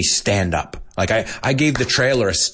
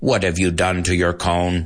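mechanical, robot-like voice; 4 semitones lower than usual. Acting out a dad spotting his daughter's tattoo, in a robotic voice. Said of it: "they have like this robotic voice".

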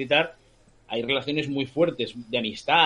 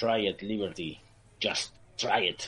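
muttered through teeth, much quieter and slower; 4 semitones lower, 6 dB quieter than usual. Recounting a movie scene, the speaker quotes John Wayne speaking through gritted teeth. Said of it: "así entre dientes".

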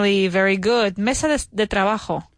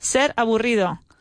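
usual speaking voice

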